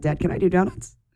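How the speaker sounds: eager, bursting with excitement. Retelling a young driver's reply after a race: imitating excited Colton Herta. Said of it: "so excited".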